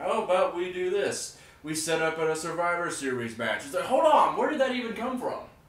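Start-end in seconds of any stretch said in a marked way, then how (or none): 0.0-3.6 casual, offhand, nonchalant tone, acted. Retelling how a match was set up: imitating nonchalant Stephanie. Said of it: "Stephanie just said it all nonchalantly".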